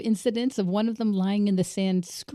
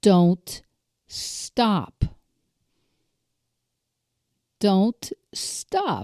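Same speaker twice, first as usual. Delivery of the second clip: mock grave, very serious, very slow insistent delivery; 3 dB louder than usual. Retelling what the oldest child told the middle one: imitating a very serious voice. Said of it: "in a very serious voice".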